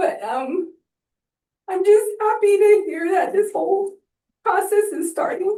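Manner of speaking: speaking while crying, tearful through the words. A member of the public making a statement during questions, crying while speaking. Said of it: "I don't know why I'm like crying".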